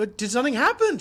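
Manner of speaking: loud, high calling-out voice. Acting out a character standing up and calling after someone: calling out. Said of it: "She, like, calls out".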